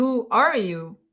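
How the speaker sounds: still shaken, high, babbling voice. Still shaken after a fright, asking the writing figure who it is, shaken-up voice. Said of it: "in my best shaken up voice".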